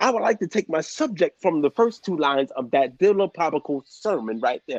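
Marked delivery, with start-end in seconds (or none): none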